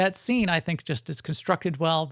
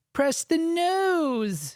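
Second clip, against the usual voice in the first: put-on high whiny kid voice, drawn out and nasal; 12 semitones higher than usual. Quoting young Anakin from episode one, in young Anakin's whiny little voice. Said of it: "in his whiny little voice".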